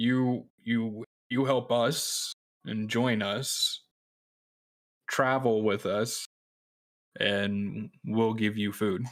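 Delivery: slow, simple, plain speech. In a role-play, the speaker offers a character food, talking slow and simple. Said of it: "I'm talking slow and just trying to put it very simply for him".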